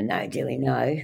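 play-acted firm, mild, stern scolding cry. Retelling a crocodile landing between her legs: retelling screaming at a crocodile. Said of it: "after screaming at her".

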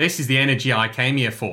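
put-on speaking in Australian accent. Streamer reads a viewer's Australian super chat aloud: Australian accent. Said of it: "How's my Australian accent?".

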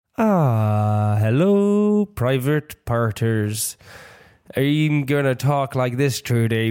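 very slow half Bristol, half Irish accent. Greeting listeners of your podcast, try out a half Bristol, half Irish accent. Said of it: "sounds like half Bristol and half this today, Irish".

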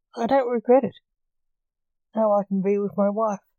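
ordinary delivery

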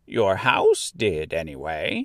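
broken up with laughter, swooping pitch. A little old woman replies to Dorothy: with a laugh. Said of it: "replied the little old woman with a laugh".

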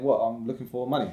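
normal talking voice

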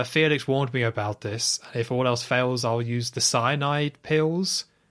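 ordinary talk

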